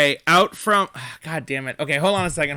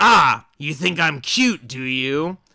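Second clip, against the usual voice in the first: put-on voice of a small creature; 4 dB louder than usual. Voicing a little creature answering a player in the game: voicing the little guy. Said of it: "he goes".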